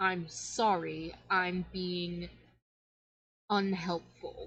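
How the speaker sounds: groan dragged through the words, very slow. Voicing a suffering sun goddess who apologizes: groaning while speaking. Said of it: "the sun goddess just sort of groans and goes".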